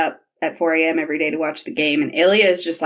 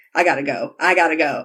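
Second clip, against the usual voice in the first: put-on overwhelmed voice. Retelling a scene where a character hits emotional overload: imitating Ilya overwhelmed. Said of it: "That's what pushes Ilya into overload".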